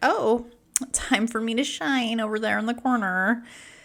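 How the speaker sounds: playful, high, fun little cat voice. Recording a podcast, the host voices the cat in the corner, fun little cat voice. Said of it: "He's got a he's got a fun little voice".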